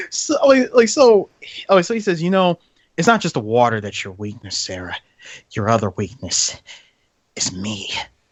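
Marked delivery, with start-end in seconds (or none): 3.4-7.9 very low film-star voice, dropped way down.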